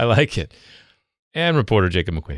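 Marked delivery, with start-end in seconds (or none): 1.3-2.4 disappointed, letdown tone, much lower pitch. A podcast host introduces the reporter to his co-host, sounding disappointed. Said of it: "don't sound so disappointed".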